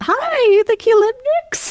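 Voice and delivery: put-on Irish-Romanian accent. Retelling a visit to a haunted house, the speaker imitates the man at the door in an irish romanian accent. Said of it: "his like Irish Romanian accent".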